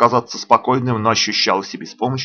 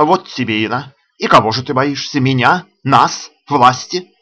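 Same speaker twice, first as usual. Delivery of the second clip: ordinary delivery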